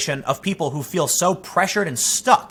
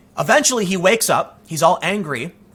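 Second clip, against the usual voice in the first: ordinary delivery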